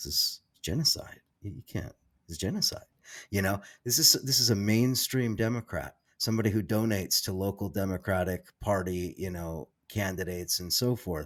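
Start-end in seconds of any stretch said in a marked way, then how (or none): 0.0-2.9 hushed, close, under-the-breath whisper. Recounting what a Democratic donor once told the speaker: retelling a whisper. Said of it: "he kind of whispers it to me".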